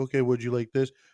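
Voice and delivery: put-on quiet innocent girl. Retelling how young girls answered a lady snapping at them: imitating a quiet, innocent girl. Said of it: "quiet and innocent".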